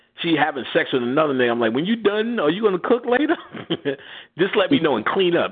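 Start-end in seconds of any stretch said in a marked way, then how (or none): 1.7-5.5 joking, pitched up. The speaker acts out what he once told her, retelling a joking remark. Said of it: "I told her jokingly".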